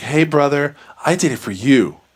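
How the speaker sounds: unsettling, creepy, eerie voice. Recapping a story's ending, quoting the sister to her brother: imitating a creepy voice. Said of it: "In like this creepy voice".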